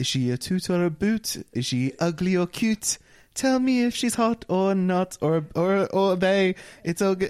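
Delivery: attempted posh British accent, poorly done. Dared by friends to say the line, bad posh english accent. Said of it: "Do it in a posh accent".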